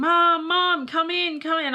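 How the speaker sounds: put-on shrill, drawn-out, very high, loud child's scream. A mother retells her son calling her in from the backyard, imitating son screaming. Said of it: "he's screaming".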